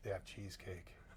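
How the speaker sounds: very soft, flat, low-key hushed murmur. Retelling Tommy's answer when asked why he can't keep his game face, low-key, monotone Tommy Dreamer voice. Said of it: "Dreamer's very low key, monotone".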